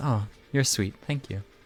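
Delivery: shy, flattered, bashful, pleased tone. A game master voices a server who was just given a big tip: flattered and bashful. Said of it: "She kind of blushes a little and goes".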